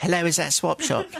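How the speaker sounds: feeble, weedy, small thin voice. Retelling Gary's phone call to a show, in Gary's weedy voice. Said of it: "Weedy voice".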